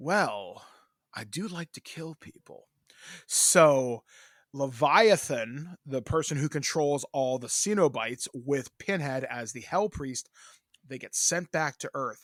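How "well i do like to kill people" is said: put-on killer doll character voice. Pitching a horror film plot, acting out Chucky's reply: Chucky voice. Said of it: "And Chucky's like".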